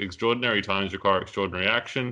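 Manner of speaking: normal talking voice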